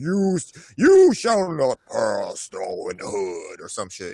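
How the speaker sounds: grand, swooping, loud, deep booming voice. Speaker wishes for a deeper voice and tries one out, trying for a deeper voice. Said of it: "I wish I had a deeper voice that way I could just be like".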